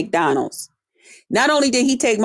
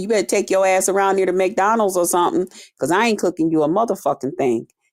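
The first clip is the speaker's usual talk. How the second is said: ordinary talk, nothing marked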